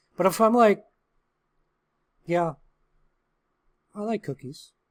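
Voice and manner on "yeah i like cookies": relaxed, unbothered, unexcited, with small pause. Showing a less desperate way to say you like cookies: calm, not desperate. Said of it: "I also pause a little bit in my speech and I sound less desperate".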